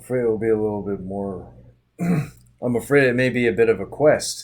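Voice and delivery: loud, shoddy, put-on Scottish accent. A character answers an offer of help for the dead man, in a bad Scottish accent. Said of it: "Scottish accent is shitty".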